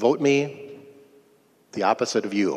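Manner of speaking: put-on flat deadpan delivery. Recalling what a fellow representative would say to him, retelling it deadpan. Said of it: "he'd have this deadpan and he'd say".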